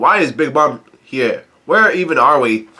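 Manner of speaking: ordinary talk, nothing marked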